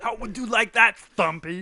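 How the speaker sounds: horrible put-on Austrian accent, loud and high. Trading impersonations with someone, threaten a nickname in a horrible Austrian impersonation. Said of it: "I do a horrible impersonation of an".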